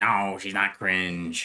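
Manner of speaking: low, very slow drawl. Retelling a conversation about Aurora, imitating a friend's voice. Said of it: "In that voice, too, in that voice".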